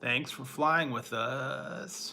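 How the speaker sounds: very slow, laid-back, cool mellow pilot-style drawl. Retelling a pilot's announcement on a plane: imitating a cool, mellow pilot voice. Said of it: "get that all cool, mellow voice".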